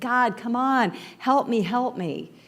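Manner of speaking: slow, scared, frightened pleading tone. Retelling a joke, a man calls out to god: imitating a scared plea. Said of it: "he's getting really scared".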